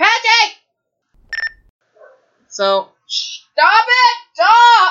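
very high, dragged-out, drawn-out yelling scream. Recording at home, the speaker yells at the barking dogs to stop, screaming at them. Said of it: "I'm screaming in the mic".

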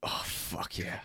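whispered, breathy grunting mutter under the breath. Teasing another speaker about a bathroom moment: imitating someone grunting under breath. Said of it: "you're just grunting under your breath".

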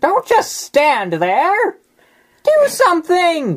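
very high, very loud, shrill, swooping, riled-up voice. Speaking your thoughts to her during the scene, say this in a worked-up voice. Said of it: "What was that voice?".

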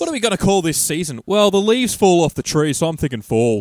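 very loud, high, put-on Australian accent. Voicing the people being joked about, in a fake Australian accent. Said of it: "It sounded like it was a fake Australian accent".

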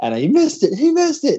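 mock very high, frantic, flipped-out screaming. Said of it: "I remember screaming".

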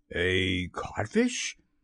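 blank, flat repetition. A man called only a codfish echoes the word back: echoing blankly. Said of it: "Hook echoed blankly".

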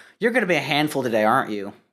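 put-on deadpan, straight-faced delivery. Retelling what mom said after a joke: imitating mom's deadpan line. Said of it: "my mom looks at me with a straight face and she goes".

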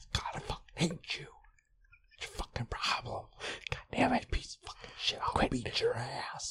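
furious, seething, very hushed whispered rant. Showing how hard it is to swear at someone intensely while whispering: angry whisper. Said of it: "it's hard to be like super intense if you're whispering".

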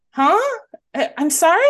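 mild, high, soft-spoken gentle voice. Retelling how a comedian friend answered a heckler: imitating a friend's soft voice. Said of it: "he has a very soft voice".

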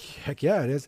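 mock-excited voice. Retelling a man's reply to a woman who asked about his game, retelling an excited reply. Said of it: "he's all excited about putting his game together".

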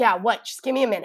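very loud, high, fed-up exasperation. A mother retelling how she answered her son while struggling, retelling sounding exasperated. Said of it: "just sounded exasperated".

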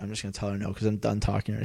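acted whispering. Retelling what a worker said under her breath: imitating someone whispering. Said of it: "the lady whispered".

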